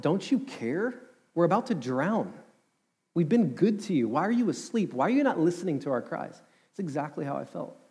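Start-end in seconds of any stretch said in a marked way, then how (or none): 0.0-6.4 anguished, pleading, high, desperate scream. Retelling the Bible story as the disciples cry out to Jesus, retelling a scream. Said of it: "his disciples scream out".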